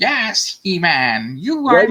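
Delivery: very slow, drawn-out cartoon villain voice with swooping pitch. Seeing Skeletor stuff, the speaker does the voice he loved as a kid: Skeletor voice. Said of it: "I'm doing the voice right now".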